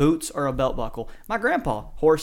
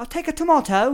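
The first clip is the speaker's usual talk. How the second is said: very high, put-on, exaggerated British accent; 13 semitones higher, 3 dB louder than usual. Trying out accents in conversation, the speaker says a line in a British accent.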